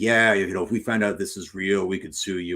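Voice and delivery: ordinary talk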